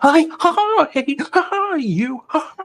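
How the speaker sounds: squeaked out, high-pitched and loud. Imitating a character who says ha between every word, in a Mickey Mouse voice. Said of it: "like a Mickey Mouse voice".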